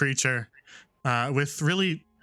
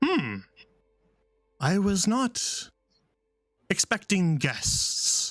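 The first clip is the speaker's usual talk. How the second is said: slow, echoing, ringing voice; 4 semitones higher than usual. A voice speaks in all three listeners' heads at once, echoing voice. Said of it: "an echoing voice in your head all at once".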